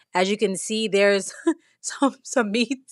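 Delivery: words fighting off a laugh. Showing the meats at the bottom of the refrigerator: trying not to laugh. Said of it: "I'm trying not to laugh".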